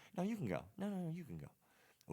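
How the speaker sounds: mock overly polite voice. Voicing two fighters hesitating to attack each other: imitating overly polite people. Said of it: "overly polite at a door".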